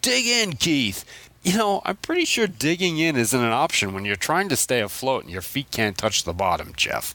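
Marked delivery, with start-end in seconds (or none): 0.0-1.0 high-pitched mock yelling. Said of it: "And [name]'s yelling".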